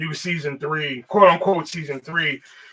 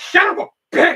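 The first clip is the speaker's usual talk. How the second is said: relished, savoured delivery in a character voice; 4 dB louder than usual. Showing favorite lines to say as the character: Wendell voice. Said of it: "two things I love saying in the Wendell voice".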